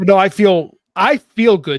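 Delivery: loud, high and excited. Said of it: "you sound excited about something".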